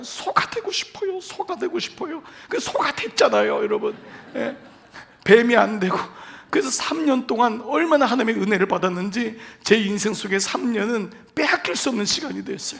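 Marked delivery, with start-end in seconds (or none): 0.0-2.2 mock weeping, tearful, crying voice. Retelling a tearful prayer from army training: retelling own crying. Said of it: "막 울면서".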